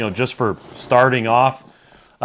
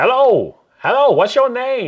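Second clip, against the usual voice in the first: sing-song put-on Chinese accent, pitched very high; 12 semitones higher, 4 dB louder than usual. Recalling how people always greeted them, the speaker quotes them: imitating a Chinese accent. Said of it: "it always sounded like a like a Chinese accent".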